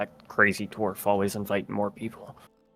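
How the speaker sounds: muttering under breath. A game master voicing a guy who scurries back from the door, muttering under his breath. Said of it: "you can hear him under his meth going".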